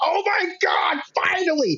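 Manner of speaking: mock scream, pitched way up, drawn out. Retelling a reaction when the long-awaited wrestling moment happens: imitating screaming at the tv. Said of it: "just screaming at the T V".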